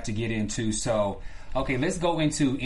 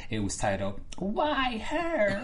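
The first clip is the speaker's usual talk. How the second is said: put-on whine, higher, quieter, slower; 10 semitones higher, 4 dB quieter than usual. Naming the episode's title to the others, in a mock-whiny voice. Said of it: "Why are you whine with it like that?".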